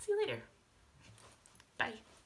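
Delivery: tearful voice, crying while talking. Saying goodbye to viewers, crying while talking. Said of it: "before I keep crying some more".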